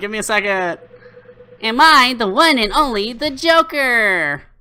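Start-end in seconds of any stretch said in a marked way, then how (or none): 1.6-4.4 bad put-on female voice, much higher. A speaker admits forgetting how she sounds, then tries anyway: bad impression of her voice. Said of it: "I can't do her voice".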